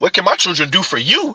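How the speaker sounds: angry, sharp, snapped delivery thrown straight back. Retelling a clip where a woman snapped at a man: imitating a woman snapping back. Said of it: "that young lady snapped".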